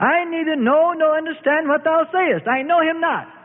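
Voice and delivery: shrill, loud, very high, defensive outburst. Peter answers the accusing maid of the high priest; loud, defensive. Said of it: "said with a loud, defensive voice".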